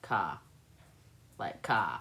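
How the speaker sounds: Boston accent, car said as ka, r dropped. Showing how the Northeast drops the R: Boston accent. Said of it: "like Boston?".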